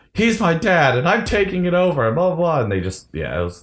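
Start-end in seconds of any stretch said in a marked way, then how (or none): 0.1-2.6 put-on, very high screaming outburst. Retelling a movie scene where a character screams at everyone: imitating someone screaming. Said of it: "screaming at everyone".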